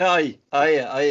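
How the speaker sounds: Scottish accent on demand. Urging someone to start speaking in a scottish accent, showing how: scottish accent. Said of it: "start speaking in a Scottish accent".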